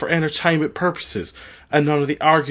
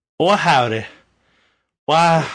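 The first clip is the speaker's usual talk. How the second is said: put-on Southern belle voice and accent; 3 dB louder than usual. Co-host introduced as the show's Southern Belle greets listeners: Southern belle accent. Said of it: "You're still doing the accent?".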